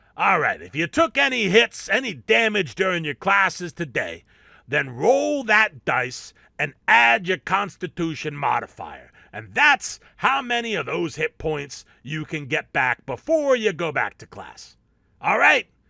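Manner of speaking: massive troll cafeteria cook voice. A troll lunch lady addresses the students in her cafeteria; troll lunch lady voice. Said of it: "A massive troll in a hairnet and a greasy apron, / A massive troll in a hairnet and a greasy apron, / but the lunch lady murmurs a few words of magic, / but the lunch lady murmurs a few words of magic".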